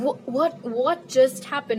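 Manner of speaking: normal talking voice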